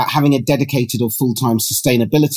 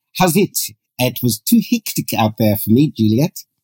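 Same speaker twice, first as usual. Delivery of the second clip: South African accent attempt. Trying to master an accent on air, in an attempted South African accent. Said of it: "South African accent. / Yes, that was it".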